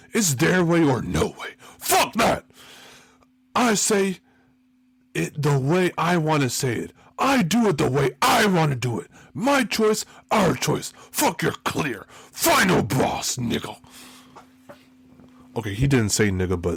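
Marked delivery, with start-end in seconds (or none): 0.2-13.8 slow, drawn-out declaiming with raised pitch. Doing an impression of The Rock: The Rock impression. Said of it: "my The Rock impression".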